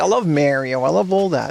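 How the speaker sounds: put-on Australian accent. Retelling what an Australian coworker said: imitating an Australian accent. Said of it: "That's how she talked".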